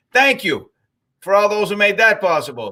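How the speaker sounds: heavy, syrupy, high-pitched dripping sarcasm. Commenting on Arizona being a virus hotspot, dripping with sarcasm. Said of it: "with sarcasm drip-, dripping down his".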